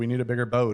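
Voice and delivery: ordinary talk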